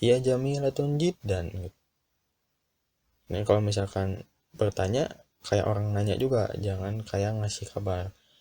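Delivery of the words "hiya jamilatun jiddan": lightly admiring, impressed tone with touch of wonder. Teaching intonation, speaker says hiya jamilatun jiddan with a slightly admiring tone. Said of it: "ada kagum, apa, nada kagumnya sedikit gitu".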